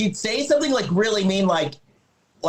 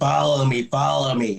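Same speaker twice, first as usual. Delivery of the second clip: put-on creepy voice, lower pitch; 6 semitones lower than usual. Retelling a story as Trudy leads Candace away: creepy Trudy voice. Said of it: "she's getting creepier and creepier".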